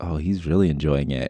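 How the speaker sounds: murmured, hushed stage whisper. Retelling what the other speaker half-whispered: imitating a half-whisper. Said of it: "you had whispered, you were like".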